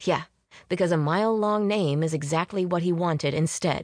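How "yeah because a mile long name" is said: ordinary delivery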